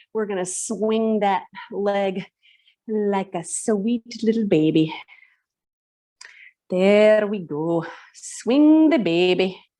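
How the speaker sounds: Scottish crossed with American Southern accent. Leading a stretch with a leg swing, in a hybrid Scotch-Southern accent. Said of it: "It's like a hybrid Scotch Southern".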